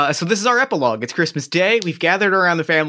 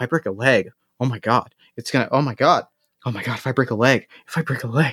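whispering, lower; 5 semitones lower than usual. Acting out a character's monologue while describing a scene: whispered monologue. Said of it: "this whispered monologue".

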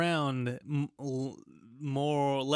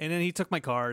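usual speaking voice

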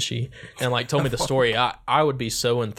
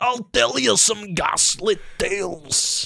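hyper, strained Scottish brogue, very high pitch; 10 semitones higher than usual. Showing how a Scottish accent is done: strained hyper Scottish accent. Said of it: "when I do a Scottish or an Irish, I like to, like, strain a little bit".

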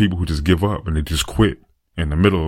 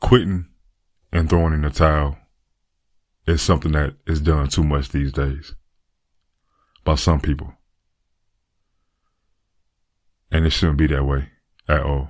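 slightly emotional, moved tone at a lower pitch; 3 semitones lower than usual. Encouraging listeners to keep pushing, pausing midway: a little emotional. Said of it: "I'm getting a little bit emotional right now".

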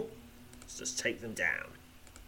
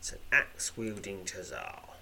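plain

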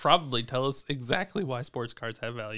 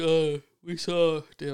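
loud, drawn-out words spoken straight through a yawn; 5 semitones higher, 5 dB louder than usual. Answering a question about trading card prices, yawning while talking. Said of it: "I'm yawning while talking".

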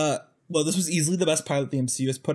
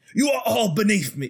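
badly done Australian accent, pitched higher; 6 semitones higher, 3 dB louder than usual. Attempting a Loki line that slips into a bad Hemsworth impression. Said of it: "why am I going into Hemsworth?".

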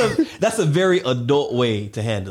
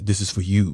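deep, refined gentleman's tone; 6 semitones lower than usual.

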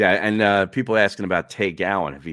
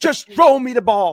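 very high, loud, frantic yelling; 7 dB louder than usual. Retelling a player yelling at a teammate: imitating Terrell Owens yelling. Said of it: "yelling at Big Red".

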